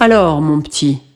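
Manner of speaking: deep, low, man-like voice. A narrator reads a woman speaking to a boy who just woke: deep, man-like voice. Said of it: "d'une voix grave comme celle d'un homme".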